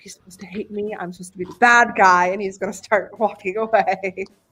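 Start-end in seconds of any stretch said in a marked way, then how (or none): 0.0-2.3 mumbled, muttered, faster. Acting out how the other man will react, mumbling to himself. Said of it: "mumbling to himself".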